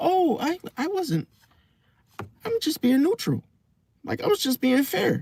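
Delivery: very high, acted, butter-wouldn't-melt innocence. Imitating how she says things so they sound innocent: imitating an innocent-sounding tone. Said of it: "it sounds innocent".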